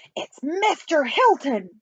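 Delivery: crying out in a high-pitched exclamation. The president finally guesses the name in the chief spy's game, crying out. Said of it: "cried the president".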